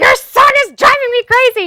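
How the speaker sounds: piercing, shrill, very high, very loud scream. Retelling a call to mother after hanging up with brother: retelling own scream. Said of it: "screaming at my mother".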